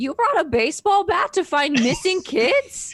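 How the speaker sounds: aghast, horrified shriek, very high and loud. The players hear someone call down from upstairs, horrified. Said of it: "a horrified".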